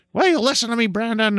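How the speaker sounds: mock yelling, pitched very high. Recalling how their mom yelled at them as a kid, imitating mom yelling. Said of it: "I've had my mom yell at me that way".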